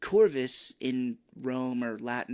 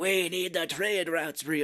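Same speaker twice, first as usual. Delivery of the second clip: put-on British accent voice, higher-pitched; 4 semitones higher than usual. Imitating an actor's line in a weird British accent: Kiefer Sutherland in British accent. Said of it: "doing this weird British kinda accent".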